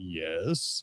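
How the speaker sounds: very low, deliberately deepened, drawn-out put-on voice. Retelling answering two young ladies who called him miss: put-on deeper voice. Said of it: "I made my voice deeper".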